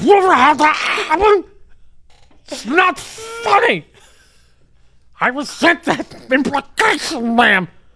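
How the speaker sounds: very high-pitched, loud, squealing ranting voice. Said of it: "High-pitched Mike".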